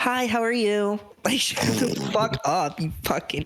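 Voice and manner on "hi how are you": high, polite service-counter customer service voice. Speaker acts out ordering food at a drive-through, in a customer service voice. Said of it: "customer service voice".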